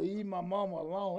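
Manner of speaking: put-on deep, rasping voice. Retelling a little boy's retort, the speaker imitates his deep raspy voice. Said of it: "That old deep rasping voice".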